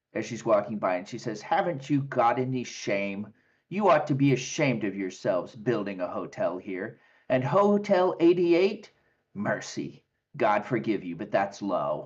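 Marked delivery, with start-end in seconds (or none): 1.4-12.0 bitter, angry, sneering, disapproving tone. A woman walking by sees you outside the gate and scolds you, sneering angrily. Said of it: "she kind of sneers at you angrily".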